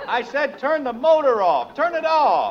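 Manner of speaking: loud yelling. Stuck in the snow, asking a tractor driver to turn the motor off, shouting over it. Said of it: "Can't hear you".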